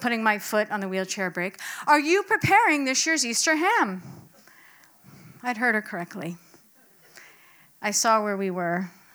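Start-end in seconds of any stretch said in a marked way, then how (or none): 1.9-4.0 loud, pitched-up voice, every word carefully enunciated. Retelling how grandma, pushed in her wheelchair, repeated her question: loud, deliberate enunciation. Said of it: "with deliberate volume and enunciation".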